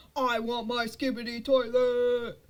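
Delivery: loud, slow mock tantrum scream, wailed out.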